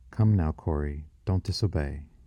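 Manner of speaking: usual speaking voice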